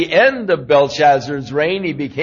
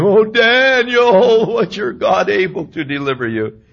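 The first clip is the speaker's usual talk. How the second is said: put-on mournful lamenting wail; 5 semitones higher than usual. Retelling the daniel story, the speaker voices the king's cry as a lamenting wail. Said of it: "he cried with a lamentable voice".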